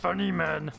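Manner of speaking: crazed cartoonish voice. Respond after Griffin is told to focus on beating the level, in a deranged Homer Simpson voice. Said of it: "Is that a deranged Homer Simpson?".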